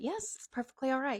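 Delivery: sugary, fake-nice, high voice. Retell her answer when you asked if everything was all right, in a fake-nice, high-pitched voice. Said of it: "All nice, high-pitchy voice".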